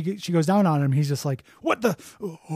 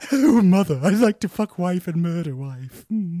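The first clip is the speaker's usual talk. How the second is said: put-on cartoon baby voice. Replying to the cartoon mom in a crossover bit: Stewie Griffin voice.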